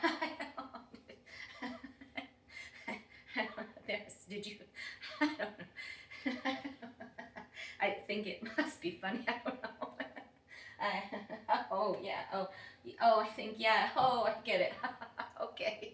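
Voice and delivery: confused laughing while talking. Doing a laughter exercise, joining in without getting the joke: laughing without knowing why. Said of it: "so "I don't know why I'm laughing."".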